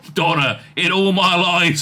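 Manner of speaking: ordinary delivery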